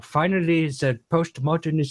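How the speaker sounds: put-on German accent, put on. Imitating Doctor Lehman's words in a German accent. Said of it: "he's got his German accent".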